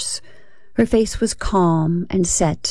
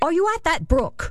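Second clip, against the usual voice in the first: severe, stern, pitched very high; 9 semitones higher than usual. A woman questions a child hiding among the bushes at dusk, stern. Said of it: "she asked sternly".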